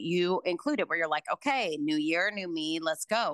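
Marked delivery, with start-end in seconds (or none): none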